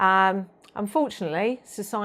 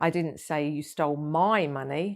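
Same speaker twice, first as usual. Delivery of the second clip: MY stressed with a rising end. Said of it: "spoken in several different ways".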